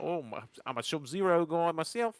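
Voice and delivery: put-on Australian accent. Retelling what a stranger on a cruise said: imitating an Australian accent. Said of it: "Ah, Australian".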